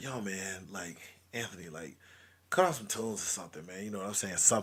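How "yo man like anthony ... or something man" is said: soft, hushed, whispered half-whisper. Retelling asking for music on a late-night drive: imitating own whisper. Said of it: "I finally just kinda whisper".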